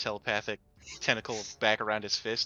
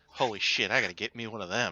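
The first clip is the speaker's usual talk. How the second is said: muttering under her breath. Voicing a character reacting to seeing another character's speed: muttering under her breath. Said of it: "she mutters under her breath".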